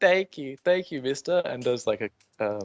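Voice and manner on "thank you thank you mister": put-on high, tearful, crying child voice. Voicing a rescued kid hugging a player: crying kid voice. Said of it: "he's like".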